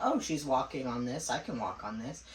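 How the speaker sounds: ordinary talk, nothing marked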